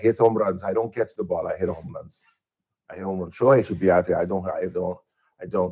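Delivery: very bad put-on Latin accent, low pitch. Mocking a baseball player out in the outfield, doing a bad Latin accent impression. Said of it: "worst Latin uh, impersonation I've ever heard".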